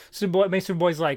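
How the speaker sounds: usual speaking voice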